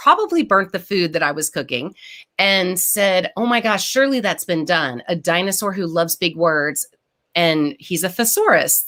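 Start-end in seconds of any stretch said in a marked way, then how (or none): none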